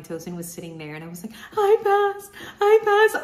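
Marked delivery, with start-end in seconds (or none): 1.5-3.2 very high, very loud, tearful bawling sob. Retelling the moment of seeing a passing score: imitating own crying. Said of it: "I just started bawling and crying".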